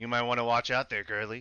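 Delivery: gruff, rough orc character voice. Voicing the orc character, in a gruff orc voice. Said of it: "the gruff voice was the orc".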